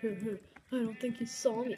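ordinary talk

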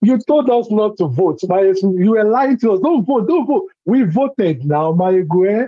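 playful, teasing, put-on sarcastic tone. Answering on a call-in show, teasing the host: put-on sarcastic tone. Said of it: "I'm gonna be a little bit sarcastic".

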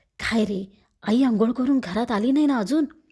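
low, hushed voice. Durga asks Apu whether their mother is back yet; hushed voice. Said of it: "दबक्या आवाजात दुर्गा म्हणाली".

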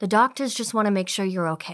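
plain

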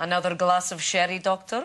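put-on Hungarian accent. An actor, asked how he does his Hungarian physicist, demonstrates the Hungarian accent. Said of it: "How do you do a Hungarian accent?".

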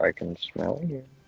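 slow, drawn-out, creaky, slightly raspy put-on voice. Quoting a bit from a Sea Nanners video: Morgan Freeman voice. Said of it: "the Morgan Freeman voice".

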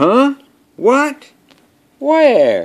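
very high, swooping, startled elephant voice. Reading a picture book aloud, voicing the sleeping elephant being woken: startled elephant voice. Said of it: "And the elephant goes".

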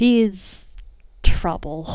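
tender, doting, very fond and affectionate. Voicing a character introducing one of his partners: said very fondly. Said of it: "he says very fondly".

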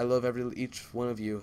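ordinary delivery

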